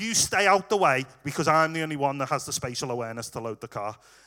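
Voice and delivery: ordinary delivery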